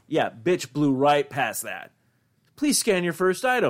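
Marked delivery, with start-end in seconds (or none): 2.5-3.7 pitched-up automated female self-checkout machine voice. Retelling what the self-checkout says: imitating a female machine voice. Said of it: "because it's a female's voice".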